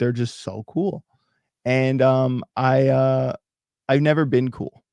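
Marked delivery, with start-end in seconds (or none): 0.0-1.0 thick, heavy, dripping mocking sarcasm. Mocking people who are supposedly so cool: heavily sarcastic. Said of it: "with the most sarcasm possible".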